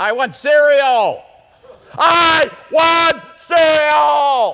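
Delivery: put-on drawn-out shriek, very high and loud, like a child. Telling of a boy with his father in a grocery store aisle: imitating a child screaming. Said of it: "This time the boy is screaming".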